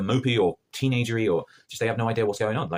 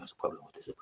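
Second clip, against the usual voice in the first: mock very quiet delivery, much quieter. Retelling a scene where a man confronts another, quoting him in a very quiet delivery. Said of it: "And he's so quiet".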